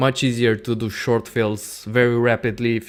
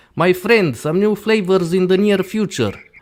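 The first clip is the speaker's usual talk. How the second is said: put-on, loud, raised, pitched-up Russian accent; 8 semitones higher, 5 dB louder than usual. Reading out another question aloud, as its asker requested, in a Putin accent impression. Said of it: "I have to do this with an accent".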